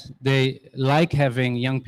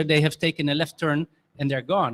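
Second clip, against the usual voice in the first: ordinary talk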